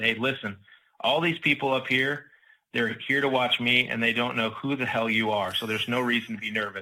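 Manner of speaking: ordinary talk, nothing marked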